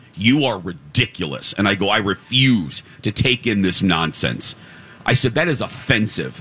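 plain

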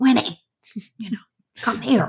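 mildly mean, put-on stern voice. Retelling calling winnie out of the car, putting on a mean voice. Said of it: "I had to use my mean voice".

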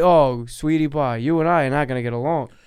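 mock old-timer Brooklyn voice. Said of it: "This sounds like a guy who talks like this".

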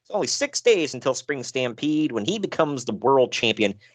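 ordinary delivery

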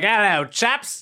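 put-on English accent. Acting out being given an english wrestling persona: put-on english accent. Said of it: "just a peasant from England, you're like".

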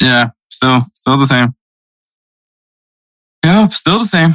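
dejected, defeated-sounding tone. Comparing group-stage picks, admitting the score is still the same, sounding defeated. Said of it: "you sound so defeated".

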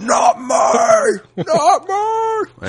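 very high, loud shout.

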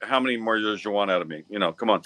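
ordinary talk, nothing marked

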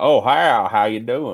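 hulking, big rural country goon voice. Imitating how a man he knew talked: big country goon voice. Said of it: "he talks like a big country goon".

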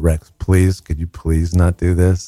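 put-on courteous, polite, asking-nicely pleading voice. Retelling asking a climbing child to stop: imitating own changed pleading voice. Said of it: "then you change your voice and you go".

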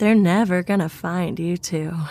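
creepy, cheerful sing-song voice with horrible sweetness. Reading a story where a man whispers through a door hole: horrible happy sing-song voice. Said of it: "In that horrible sing-song voice".

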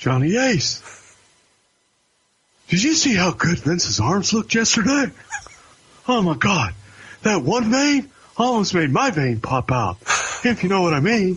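high, lilting voice. Imitating a wrestling executive firing someone: imitating Johnny Ace. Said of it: "Tell everybody who you're doing".

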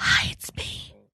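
quiet whispered voice. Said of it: "the other thing about whispering".

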